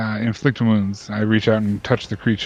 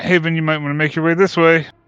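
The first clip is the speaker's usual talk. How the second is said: loud, pitched-up shout, calling out; 7 semitones higher, 5 dB louder than usual. A player's character steps back from a fallen creature and calls to an ally, shouting out. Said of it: "I'm going to shout out".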